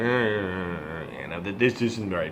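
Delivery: low, soft grumble. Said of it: "grumble and shuffle your feet and go".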